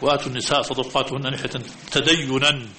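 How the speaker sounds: ordinary delivery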